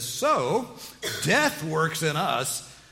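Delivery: high, loud, slow, dripping sarcasm. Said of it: "Sarcasm dripping off of these words".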